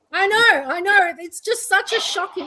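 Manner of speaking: put-on surprise, sarcastic. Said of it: "I'm being sarcastic".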